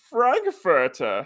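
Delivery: very exaggerated German accent, loud and high-pitched. Showing how Bane sounds in that show, exaggerated German accent as Bane. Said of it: "I'll say this as German as I possibly can".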